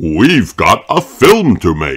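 ordinary talk

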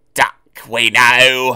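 loud, disgruntled, complaining grumble. Loaded trucks with a different engine grumble among themselves. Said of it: "they grumbled".

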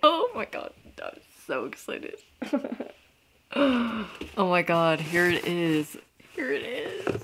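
overjoyed, swooping rising excitement, on the edge of crying. Speaker reacting as the awaited thriller finally appears, excited, about to cry. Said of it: "This is where I start crying".

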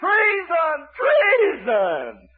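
mock very high outcry, wildly swinging, swooping holler. Retelling Athaliah's cry in a Bible story, retelling a holler of 'treason'. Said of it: "She hollering out treason".

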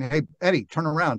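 ordinary talk

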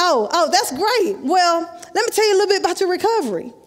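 mock, dripping, sarcastic, mocking tone. Retelling what the doctor said about the knee: imitating a sarcastic doctor. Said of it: "Real sarcastic".

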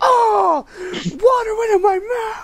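very high, squealed mock panic. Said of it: "you were like".

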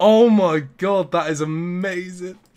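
overjoyed. Streamer reacting to a trade on day three, overjoyed. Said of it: "I'm so happy".

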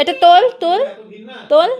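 firm, loud, high-pitched scolding tone.

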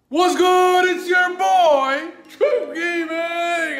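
voice cracking. Gaming channel host opening a new video, voice cracking. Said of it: "my voice cracked".

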